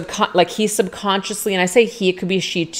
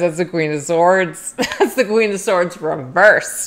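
words broken up by laughing throughout. Reading out a card to viewers, laughing while talking. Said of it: "I'm sorry, I'm laughing".

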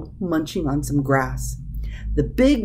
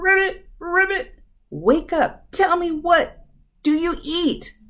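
very loud, very high shouted yell; 11 semitones higher than usual. A little frog calls to a cat it meets on the road, shouting very loudly. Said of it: "In a very loud voice, the frog shouted".

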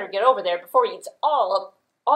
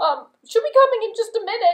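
very high, scrawny, pleading little goat voice; 13 semitones higher, 5 dB louder than usual. Telling a story, speaking as the goat, in a small skinny goat voice. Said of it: "I'm skinny and I'm scrawny".

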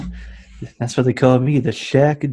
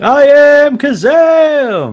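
high, slow, drawn-out yell. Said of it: "He's yelling this".

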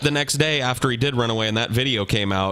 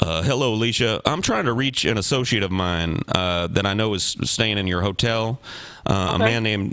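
normal talking voice

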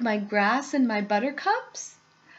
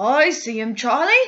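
loud, eager, thrilled, excited delivery; 6 dB louder than usual. Narrator reads Grandpa Joe answering Charlie about the little man; excitedly. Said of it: "said Grandpa Joe excitedly".

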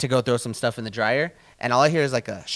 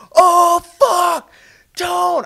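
very high, shrill, very loud scream; 11 dB louder than usual. Telling a friend about finding a snake, retelling screaming for a brother. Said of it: "I'm screaming for my brother".

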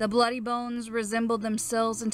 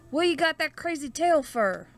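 gasping, rising high pitch; 6 semitones higher than usual. Narrating a hunter who sees a raccoon tail beside him, gasped. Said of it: "The hunter saw the tail and gasped".

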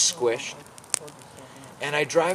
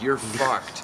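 ordinary talk, nothing marked

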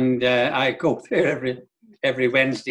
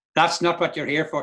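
put-on woman's voice, broad Derry accent laid on thick; 3 semitones higher than usual. Speaker quotes a woman's reply to him, in a strong Derry accent. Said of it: "in the strong dairy accent".

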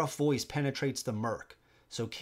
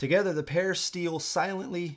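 plain

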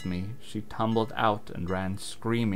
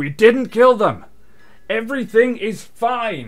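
very loud, very high yell, "fine" stretched; 13 semitones higher, 12 dB louder than usual. Narrator reading a man's line as he runs out after her, yelling.

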